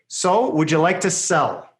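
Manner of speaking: falling pitch at the end on sell. Demonstrating a down tone on a question, falling on sell. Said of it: "That's a down tone".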